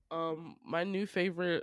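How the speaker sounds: ordinary delivery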